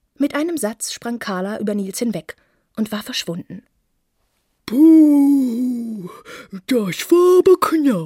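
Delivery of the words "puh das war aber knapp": very slow, loud, drawn-out relieved groan, long "puh". Someone behind Nils, just after Carla leaps away: relieved groan. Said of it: "stöhnte es hinter Nils".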